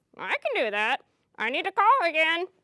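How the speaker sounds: put-on bird puppet voice. Voicing a pet bird puppet that answers its teacher: Vern bird puppet voice. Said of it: "Here he is, my pet bird, Vern".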